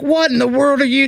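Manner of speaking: mock, full-on, fast high-pitched screaming. Retelling screaming at a semi truck driver running at them, retelling a scream. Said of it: "I'm screaming the whole time".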